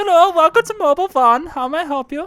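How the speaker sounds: put-on German-sounding accent. In a skit, a store clerk greets a customer, German-sounding accent. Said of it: "I didn't realize we made it to Germany".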